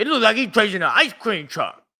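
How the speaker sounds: caveman voice, pitched high. Mocking a line from a T-Mobile commercial: imitating Kai Cenat talking like a caveman. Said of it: "Can you talk like you're not a caveman".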